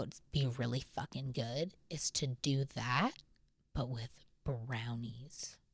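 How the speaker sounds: very hushed, quiet, slow, secretive murmur. Podcast host hiding a surprise idea from someone nearby, speaking really quietly. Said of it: "I'm saying it really quietly".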